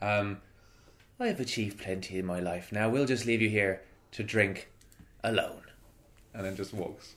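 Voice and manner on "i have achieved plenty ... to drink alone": hushed, low-key, intimidating murmur. Herb leans on the table and speaks in halfling, speaking quietly. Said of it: "says quietly in halfling".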